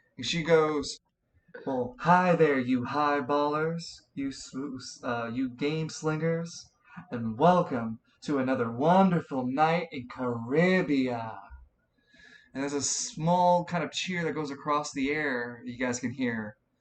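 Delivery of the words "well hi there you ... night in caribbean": sultry woman's voice. Voicing a loudspeaker announcer heard across the city: sultry female voice. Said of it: "a sultry female voice".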